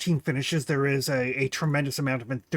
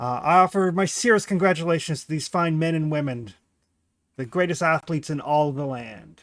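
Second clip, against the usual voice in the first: pompous, grand, showboating royal king voice; 3 semitones higher, 4 dB louder than usual. The king addresses the crowd at the games he sponsors: grandstanding king's address. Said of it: "The king dismounts with a flourish, kind of like waving to the crowd, like this huge smile on his face. You can tell that he's definitely in his element with this kind of grandstanding. / there's like".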